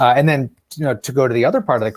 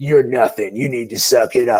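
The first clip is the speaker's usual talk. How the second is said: mean, evil, taunting put-down tone. Describing a harsh inner voice like an older brother's, the speaker does a mock-evil taunting voice. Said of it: "evil voice that's probably like my older brother".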